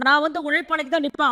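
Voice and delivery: ordinary talk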